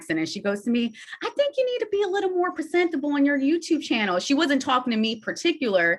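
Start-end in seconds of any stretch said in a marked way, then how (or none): 1.2-4.2 put-on Southern accent, pitched very high. Retelling what a girl named Monica said: Monica's Southern accent. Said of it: "has a Southern accent".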